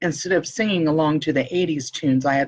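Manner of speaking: plain reading voice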